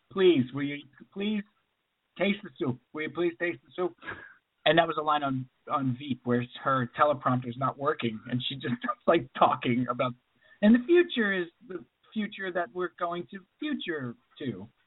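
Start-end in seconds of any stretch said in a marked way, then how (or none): 0.1-3.9 put-on fast-talking old man character voice.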